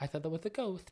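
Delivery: soft, frightened hush.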